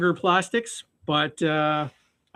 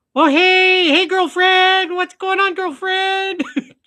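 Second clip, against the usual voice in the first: put-on loud, very high girly puppet voice; 14 semitones higher, 7 dB louder than usual. A puppeteer demonstrates a puppet's voice to viewers: girly puppet voice. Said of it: "that's as close to a girly voice as I got".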